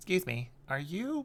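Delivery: put-on very high little boy voice. Voicing a halfling boy who recognizes a player: halfling boy voice. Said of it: "this little, like, halfling boy walks over and goes".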